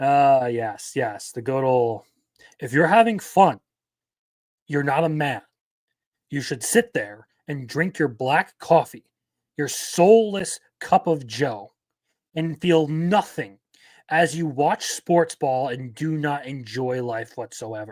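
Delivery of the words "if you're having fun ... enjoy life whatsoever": caricatured parody voice of a scolding commentator. Ending on some funnies, doing a best Matt Walsh impression. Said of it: "my best Matt Walsh impression".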